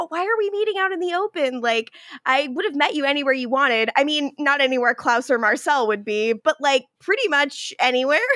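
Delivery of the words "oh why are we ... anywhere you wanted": thrilled, eager, excited outpouring of words. Retelling a scene where Josh meets Davina: imitating excited Josh. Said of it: "He's so excited. He's like".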